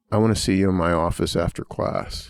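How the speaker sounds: hushed, secretive, confidential whisper. Retelling what a professor leaned over and said: imitating a whisper. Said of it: "whispers to me and says".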